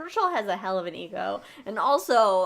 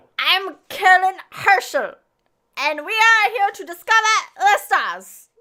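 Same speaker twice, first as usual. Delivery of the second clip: very loud, high-pitched yell in thick German accent; 11 semitones higher, 8 dB louder than usual. Told to just yell it, introducing herself as Caroline Herschel in a very thick German accent. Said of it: "very thick German accent".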